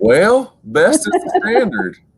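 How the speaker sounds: slow, swooping, sing-song Southern drawl. Answering a request for an impression of Dabo Swinney: Dabo Swinney impression. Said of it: "your best Dabo impersonation".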